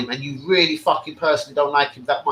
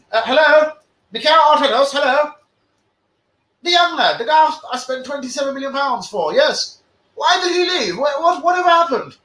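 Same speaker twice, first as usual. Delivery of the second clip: put-on English accent, pitched very high; 11 semitones higher, 3 dB louder than usual. A speaker imagines one of the Americans asking Arteta about a player, put-on English accent. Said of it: "I know I'm kind of doing an English voice".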